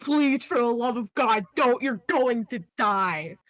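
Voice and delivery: desperate, panicked, pleading cry, acted. Voicing a character begging another not to leave: screaming in panic. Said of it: "screaming at you".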